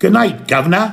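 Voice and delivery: high-pitched, poor Cockney accent.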